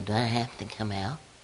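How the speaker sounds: soft, small, whimpering little voice. Recalling dealing with devils, the speaker voices one of them: whimpering little voice. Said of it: "this whimpering little voice would go".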